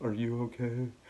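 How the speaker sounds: soft, flat, glum, lifeless depressed monotone. Retelling how Mike checked on the speaker back in the cell, imitating Mike's monotone depressed voice. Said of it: "he's so monotoned and so depressed".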